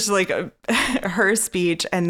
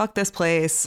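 usual speaking voice

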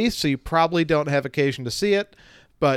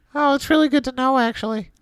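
pitched way up, squeaking; 11 semitones higher, 3 dB louder than usual. Asked by the co-host for a Marcel impression, trying again, Marcel impression. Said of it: "Give me your best Marcel impression".

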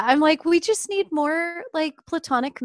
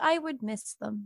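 mock sad, mournful, sorrowful grieving voice; 5 semitones lower, 10 dB quieter than usual. Quoting a character's line about missing cartoons: mournful Ax voice. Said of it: "he just sounded so mournful in my head".

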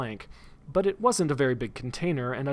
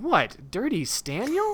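revolted, disgusted, grossed-out, high swooping voice; 8 semitones higher than usual. The narrator asks back after being told someone likes them, disgusted.

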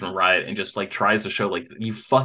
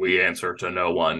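put-on robotic voice, pitched lower; 3 semitones lower than usual. Retelling a TV scene where the Sentinels go crazy: super robotic Sentinel voice. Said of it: "in what I assume is a super robotic voice".

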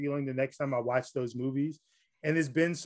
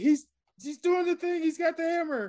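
very high, thrilled, excited shout. Retelling a moment in the theater: imitating own past shout. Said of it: "I literally shouted".

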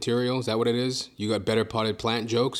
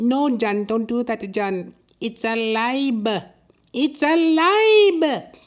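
put-on woman's voice with Filipino accent; 13 semitones higher, 5 dB louder than usual. Acting out his imagined sidekick's reply to his threat, in Madeline voice. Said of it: "a little Filipina lady as".

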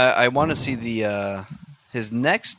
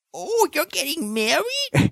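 put-on film character voice, very high and swooping. Imitating the different voice an actor uses in a wedding movie. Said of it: "he does a different voice".

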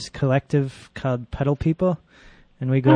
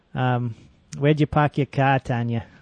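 put-on Boston accent. Co-hosts agree to do the show in accents; asking tanya, in a put-on boston accent. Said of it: "we're practicing our Massachusetts accent".

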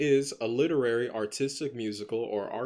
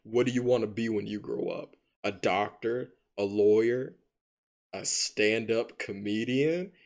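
scornful, disdainful, talking-down tone. Retelling a movie scene where a character talks to Aquila, mock disdain. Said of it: "he said it with such disdain".

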